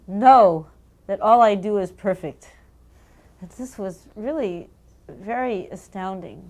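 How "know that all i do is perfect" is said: grave, very loud, stern, acted-out delivery. Recounting a reply during an argument over a torn envelope, imitating a very stern voice. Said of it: "in a very stern voice".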